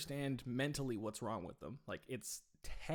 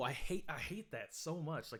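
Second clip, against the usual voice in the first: plain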